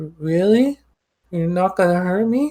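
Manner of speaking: tiny, small, high little voice. Narrator voices someone peeking out from behind a barrel, in a small voice. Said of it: "you just hear a small voice just say".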